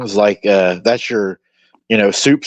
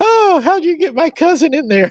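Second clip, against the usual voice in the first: put-on squeaky, very high little kid voice. Retelling an old burger commercial, voicing the little kid: imitating a little kid. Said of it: "the little kid's like".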